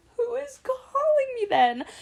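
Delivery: high, crying, panicked cry.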